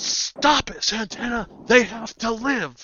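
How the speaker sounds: very high-pitched, shrill, drawn-out shout. Voicing a character who stops an attack to save others: Kyle shouting. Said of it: "and shouting".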